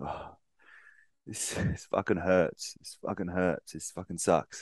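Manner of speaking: really distraught, pained complaining. Describing a runner's video before a rainy morning run, imitating distraught complaining. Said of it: "he's really distraught".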